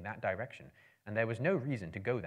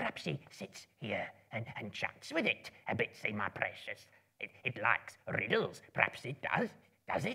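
soft, hissed creature whisper, polite, wheedling, fawning, friendly. Reading the cave scene aloud, Gollum tries to seem friendly; hissing Gollum whisper. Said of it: "a small, slimy creature. ... up came [name] and whispered and hissed. ... he hissed".

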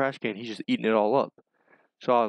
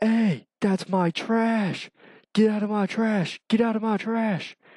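play-acted slow shouting, very high and drawn-out; 10 semitones higher than usual. Retelling yelling at a bear in the trash: retelling a yell. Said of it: "So I start yelling at it".

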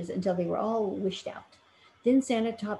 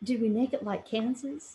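hesitant, unsure, halting delivery; 2 semitones higher than usual. The Scarecrow asks Dorothy, hesitantly. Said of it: "Asked the Scarecrow hesitantly".

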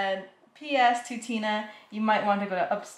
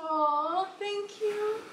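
crying, tearful, very high and soft; 10 semitones higher, 5 dB quieter than usual. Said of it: "Are you crying?".

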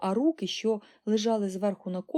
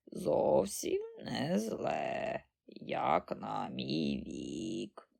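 put-on breathy, hushed, croaking old-woman granny voice; 9 semitones lower, 7 dB quieter than usual. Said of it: "проквакала бабуня Джорджина".

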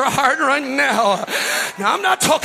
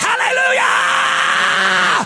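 loud, high, swooping sing-song shout; 7 semitones higher than usual. Showing the listeners how to shout praise: shouting hallelujah. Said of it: "if you start shouting".

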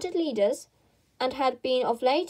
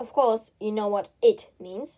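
plain

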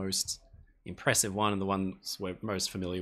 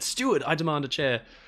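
bossy, insistent, demanding all-caps shout; 7 semitones higher, 7 dB louder than usual. Reading out a viewer's chair request: imitating someone screaming. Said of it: "he's been screaming in, in full caps".

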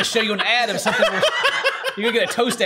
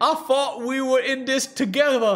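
put-on British accent, higher; 4 semitones higher than usual. Joking about british people, the speaker mimics them in a british accent. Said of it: "British people be like".

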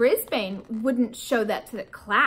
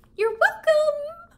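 tiny, very high, squeaky hamster voice. Narrating as the caged pet replying to the man's thanks, squeaking. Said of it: "I squeaked".

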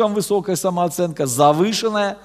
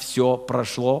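mechanical, toneless, low flat robot voice; 4 semitones lower, 5 dB quieter than usual. Saying a line, then remarking it sounds like a robot: flat robotic voice. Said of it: "Я говорю, как робот сейчас".

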